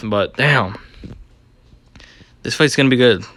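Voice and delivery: out of breath, breathless and winded. Previewing an upcoming fight, out of breath. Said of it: "i'm so out of breath".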